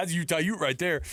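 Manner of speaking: mildly excited, hyped calling-out voice. Retelling the broadcast audio's call of the catch: imitating Sly yelling. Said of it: "Number one thing he's gotta yell out".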